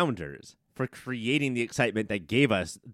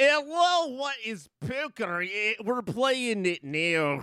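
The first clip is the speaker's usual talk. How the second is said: very high, drawn-out, bad Russian accent; 12 semitones higher than usual. Imitating an actor's unconvincing Russian villain accent: John Malkovich's bad Russian accent. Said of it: "John Malkovich going like".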